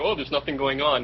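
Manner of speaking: ordinary talk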